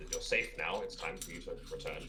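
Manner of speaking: plain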